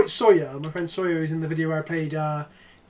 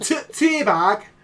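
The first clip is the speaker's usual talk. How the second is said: mock regional British accent, higher and louder; 5 semitones higher, 4 dB louder than usual. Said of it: "A regional dialect of Peasant Kenobi".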